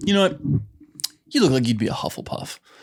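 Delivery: acted, insulting-sounding tone. Retelling what a college buddy said about Harry Potter: imitating Johnny's offensive tone. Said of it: "based off his freaking tone".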